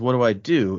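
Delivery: ordinary delivery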